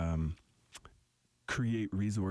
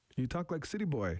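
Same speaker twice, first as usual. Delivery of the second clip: put-on high, teasing elderly voice. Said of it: "she actually made fun of me".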